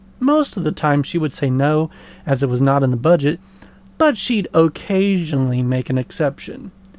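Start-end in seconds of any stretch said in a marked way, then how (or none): 4.0-6.7 occasionally strongly stressed, hit hard. Telling of asking mom to buy something: strong stress on occasionally. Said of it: "The emphasis is on the word occasionally".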